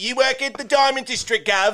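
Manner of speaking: terrible put-on British accent, very high-pitched. Mocking an actor's accent from the movie, in a bad british accent. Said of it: "That was so bad".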